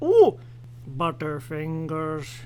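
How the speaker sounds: low cartoon dad voice with wide, swooping pitch swings. Recalling the old Butterfinger ads, doing a Homer Simpson impression. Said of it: "had Homer Simpson being all".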